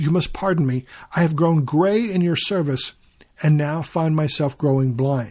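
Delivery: plain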